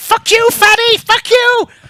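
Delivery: tiny creature screech, very high, loud, shrill. A game master voices a creature squished in a specimen jar, tiny yelling voice. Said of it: "you can hear its tiny voice yelling".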